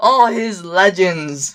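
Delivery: heavy, knowing, biting sarcasm. Talking about an anime match-up with another speaker: sarcastic. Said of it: "I'm being sarcastic".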